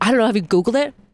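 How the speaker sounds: ordinary delivery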